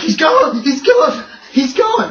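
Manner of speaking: very high, loud, panicked, frantic babbling with repeats. The game master voices a caller on the party line in an emergency: frantic woman's voice. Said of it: "there's a frantic woman's voice on the other end".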